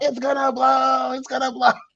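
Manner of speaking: very high, stretched-out, drawn-out panicked shriek. Retelling how a friend at a party screamed about the grill: imitating a scream. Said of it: "he's screaming somehow".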